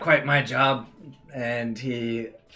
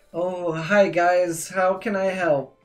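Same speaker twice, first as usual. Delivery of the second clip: put-on pitched-up voice of a young boy; 7 semitones higher, 4 dB louder than usual. Speaker voices a younger boy greeting the group, young boy voice. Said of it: "it's just a younger boy".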